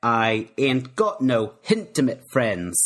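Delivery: slow Cockney accent with an added H on hintimate.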